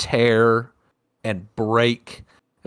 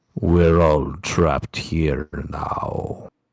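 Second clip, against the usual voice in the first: very low, dark, taunting and mocking tone; 8 semitones lower than usual. Narrating a game, the speaker voices the father's twisted voice: dark, mocking tone. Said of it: "the words twist into a dark, mocking tone".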